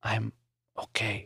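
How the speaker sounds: faint, barely audible, very quiet half-whisper. Reading aloud a line said just after a coughing spell: half-whispering. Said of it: "Maury whispered".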